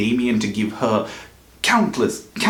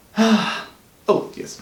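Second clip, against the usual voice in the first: sighing, much higher; 11 semitones higher than usual.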